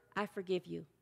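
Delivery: whispering. Leading a guided meditation, modeling the words to say: whispering. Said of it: "I want you to whisper".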